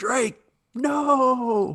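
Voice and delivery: very high yell with a long, drawn-out no. Quoting a favorite line from Sully: quoting Sully's yell. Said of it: "my favorite line from Sully is this".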